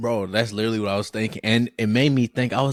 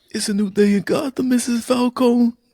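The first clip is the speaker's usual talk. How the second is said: very high, silly, drawn-out comic voice; 13 semitones higher, 4 dB louder than usual. Imitating the police chief's funny voice from the show: police chief impression. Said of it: "His voice is hilarious".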